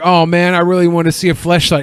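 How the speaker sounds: ordinary delivery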